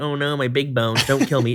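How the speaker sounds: plain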